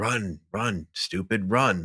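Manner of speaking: very slow, soft, urging mutter under the breath. Retelling a film character's words to a fleeing friend: muttered under breath. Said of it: "says under his breath".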